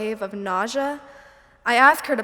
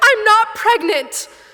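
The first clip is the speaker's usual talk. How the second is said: very high, shrill, loud shouting; 10 semitones higher, 7 dB louder than usual. Retelling own shouted reply to mom: retelling own shout. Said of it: "And I shout".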